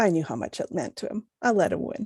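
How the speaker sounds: whispered softly. Voicing a character who hands an item over, then whispers to another: whispering. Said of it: "then whispers to Vera".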